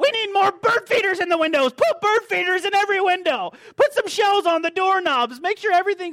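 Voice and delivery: shrill, very high, frantic full-lung scream. Retelling a man shouting orders while rushing around the house, imitating screaming at top of lungs. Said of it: "He's just screaming at the top of his lungs".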